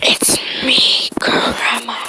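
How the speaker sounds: breathy, whispered demon voice. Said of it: "the demon voice comes out and says".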